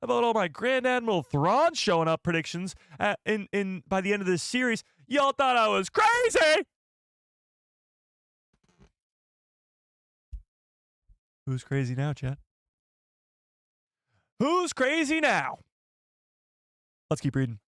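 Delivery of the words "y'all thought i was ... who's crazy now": high yelling with swoops. Gloating at the chat after a prediction came true: yelling at chat. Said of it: "Bit my cheek when I was yelling at you guys".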